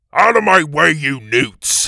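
loud, high, thundering shout. Reading a story aloud, a voice among the lizards, thundering. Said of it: "A voice thundered".

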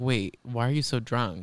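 ordinary delivery

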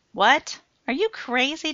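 demanding, insistent, pressing hard. Matt reacting to John agreeing to Christine's request, demanding. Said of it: "Demanded Matt".

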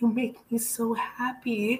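play-acted crying, high, drawn-out tearful voice. Retelling a dinner where a man cried and said this: imitating someone crying. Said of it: "and then he started crying".

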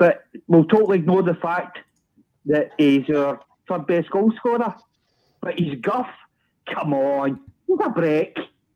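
shouting. Disputing a comment about Sakala that was just read out: shouting. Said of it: "Don't shout at me".

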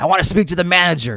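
mock screaming. Imagining an unsatisfied human confronting an angel: imitating someone screaming.

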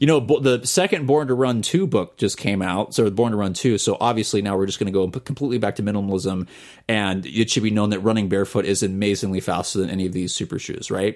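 plain

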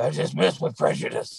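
put-on throaty, husky, creaky theatrical actress voice. Showing how one voice stands out from the clear flat ones, in a Kathleen Turner voice. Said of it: "Kathleen Turner is like".

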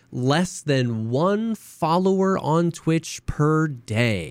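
mock very slow, smug, condescending drawl. Retelling how someone addressed the camera: imitating a condescending tone. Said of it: "in the douchiest, most condescending tone".

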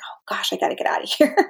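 overwhelmed, unvoiced whisper.

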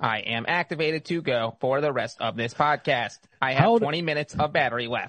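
mechanical robotic voice. On a podcast, a father speaks as a robot, in a robot voice. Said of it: "her dad does the robot voice".

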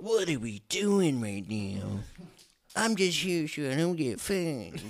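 very slow, high, drawn-out drawl. Imitating a friend saying what he would say: imitating Tyler. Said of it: "this is what Tyler would say".

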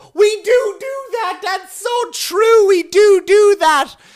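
booming, oblivious, very loud, shrill, drawn-out. Retelling how an audience member talks to her friend during a comedy set: imitating a woman talking out loud. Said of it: "turn to her friend out loud and go".

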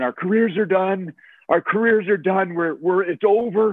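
mock weeping, high and tearful, through tears. Retelling a teammate crying in a police car: imitating someone crying. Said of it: "he's crying, literally crying in the cop car".

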